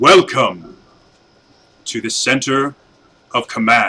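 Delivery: very deep authoritative voice. Narrating a scene where it turns to the group and speaks, very deep commanding voice. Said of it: "it speaks in this very deep, commanding voice".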